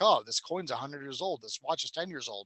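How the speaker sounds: ordinary delivery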